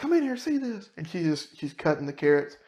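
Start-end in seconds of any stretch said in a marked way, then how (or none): 0.0-0.9 mock hollering, pitched very high. Describing a movie scene where a husband calls his wife, imitating Nicolas Cage hollering. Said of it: "he's hollering at her like".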